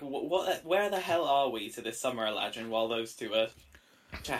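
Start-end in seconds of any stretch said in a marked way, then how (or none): 0.0-1.7 slow, drawn-out, projected hollering yell. Yelling at a captor to ask where the party is: yelling. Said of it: "I'm gonna yell".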